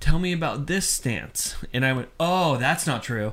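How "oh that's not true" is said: mock, put-on sarcastic tone. Recalling how they answered people at a table, retelling a sarcastic answer. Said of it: "intended sarcasm of how I answered that".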